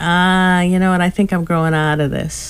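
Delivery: plain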